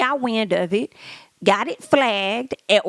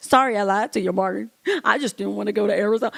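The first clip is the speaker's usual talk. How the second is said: put-on crying, tearful voice. Retelling how he called her after the abortion: imitating him crying. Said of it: "he called her crying, saying".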